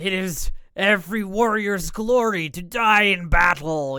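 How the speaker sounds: booming, creaking yell of an ancient grizzled giant. Retelling what an ancient giant yells out, in a booming, creaking giant voice. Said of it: "his voice is like this booming, like even though he's it's like creaking".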